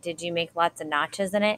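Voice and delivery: plain reading voice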